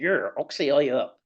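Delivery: imitated Bristol accent. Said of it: "it was that Bristol accent".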